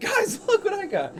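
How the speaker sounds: smiling while speaking. Speaking in character to the party, holding up a head: smiling while speaking. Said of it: "smile at them, like".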